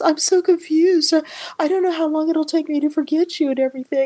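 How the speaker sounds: put-on, very high-pitched, tearful sobbing. Retelling what a woman said to a man on the phone, imitating someone crying. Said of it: "she's just crying and crying".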